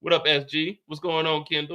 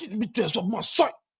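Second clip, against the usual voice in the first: mock angry, slurred, high mumble, like chewing tongue; 5 semitones higher than usual. Imitating how his dad sounded when mad, imitating angry slurred mumble.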